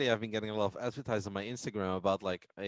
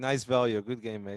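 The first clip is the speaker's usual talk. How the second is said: mock sarcastic tone; 3 dB louder than usual. Voicing a poker player needling his opponent: imitating a sarcastic player. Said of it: "A very sarcastic, good game".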